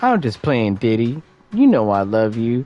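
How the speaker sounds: thick, dripping sarcasm in a swooping sing-song. Retelling someone's teasing apology to [name]: imitating a sarcastic tone. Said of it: "With that sarcastic ass, like, tone".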